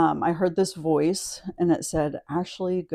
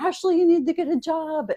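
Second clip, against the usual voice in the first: put-on, very high-pitched nagging, scolding mother yell; 12 semitones higher than usual. Retelling mom telling her to get a job: imitating mom yelling. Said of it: "my mom's yelling at me".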